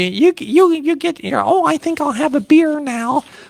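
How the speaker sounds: very high, whiny voice pitched way up. Mocking a politician's voice on air: Elizabeth Warren whiny voice. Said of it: "Elizabeth Warren and her whiny voice".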